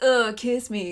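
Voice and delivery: loud, belted surfer-bro voice. Recalling the 80s Zelda cartoon, quoting Link to the princess: Link as surfer bro. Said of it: "he was kind of a surfer bro".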